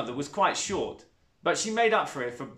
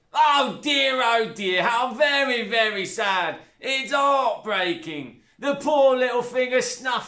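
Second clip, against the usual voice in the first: spat out, loud, drawn-out fake sympathy; 8 semitones higher, 5 dB louder than usual. Over her stepdaughter's dead hamster, the woman speaks, spat, mock sympathy. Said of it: "the woman spat, her mouth full of crisps".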